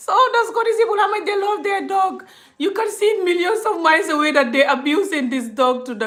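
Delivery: high-pitched, loud, laughing mockery.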